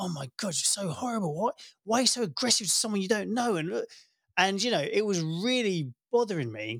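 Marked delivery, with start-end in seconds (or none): 0.0-3.6 irate, exasperated, angry outburst. Retelling own past reaction to people commenting: imitating own past angry outburst. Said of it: "I was getting really angry and irate".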